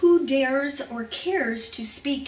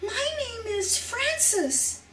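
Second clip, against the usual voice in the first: quavering, trembling, very high voice; 10 semitones higher than usual. Reading a story, the narrator tells an old man her name with a trembling voice. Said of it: "I say with a trembling voice".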